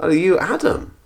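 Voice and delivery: heavy, broad Scottish brogue. Retelling a police officer questioning him in the car; thick Scottish accent. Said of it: "he says to me in his thick Scottish accent".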